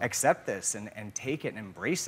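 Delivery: ordinary delivery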